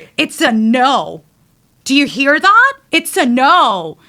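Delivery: very slow, loud, high yelling, words stretched. Retelling what was said to a man who ignored her no: imitating own yelling. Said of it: "I yelled for, like, sixty seconds".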